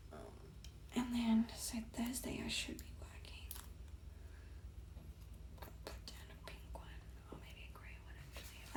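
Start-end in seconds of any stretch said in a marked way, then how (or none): 1.0-8.1 soft, unvoiced whisper. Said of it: "I'm whispering".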